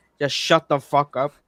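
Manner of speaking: ordinary delivery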